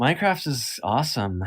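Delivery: scornful, disdainful, contemptuous tone. Saying another speaker's game is fine while they play it: contempt. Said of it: "the contempt in your voice".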